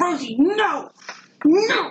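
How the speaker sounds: mock shrill, high-pitched scream. Retelling calling after her as she bolts across the yard, reenacting own scream. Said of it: "I'm screaming".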